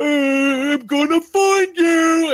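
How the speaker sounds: very high, very loud, slow, "I'm" stretched out. Voicing Donk searching the smoky room for the players: Donk voice. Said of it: "Donk is still in the room somewhere. You hear him".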